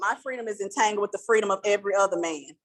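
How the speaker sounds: ordinary talk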